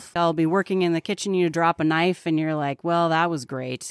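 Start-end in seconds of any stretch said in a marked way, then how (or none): 2.8-3.9 imitated sarcastic tone. Retelling dropping a knife in the kitchen: imitating own sarcasm. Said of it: "I use sarcasm a lot".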